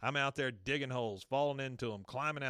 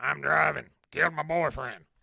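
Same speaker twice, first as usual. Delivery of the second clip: very loud, rough, rasping, creaky croak; 9 dB louder than usual. Repeating a released prison inmate's lines from an episode: Sling Blade voice. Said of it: "it sounded exactly like that".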